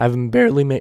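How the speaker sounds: cracking voice, breaking mid-word. Ranking a player's roster chances, the speaker's voice cracks. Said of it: "nice voice crack".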